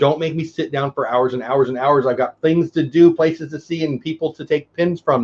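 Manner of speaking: plain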